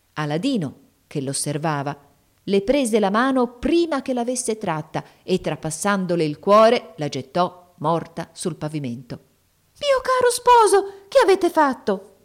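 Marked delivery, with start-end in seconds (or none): 9.8-12.0 very high, loud, startled exclamation. The princess speaks to her husband after he kills a woman, exclaiming in surprise. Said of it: "esclamò la principessa nella sua sorpresa".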